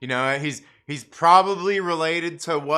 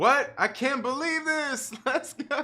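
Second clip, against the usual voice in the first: play-acted top-of-the-lungs yell, very high, very slow; 13 semitones higher than usual. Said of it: "He yelled".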